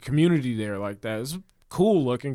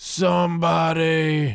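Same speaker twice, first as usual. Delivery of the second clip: put-on loud calling out, higher and louder; 4 semitones higher, 4 dB louder than usual. Retelling a hospital stay, imitating a loud patient calling for help. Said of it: "all of a sudden you hear".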